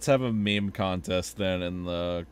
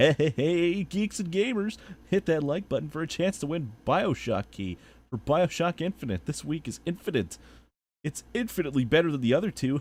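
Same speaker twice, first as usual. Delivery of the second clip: hyped host voice, pitched up, wildly swinging intonation; 9 semitones higher than usual. Switching into a bit while chatting with friends, epic YouTuber voice. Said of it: "I'm gonna have to use my epic YouTuber voice for this".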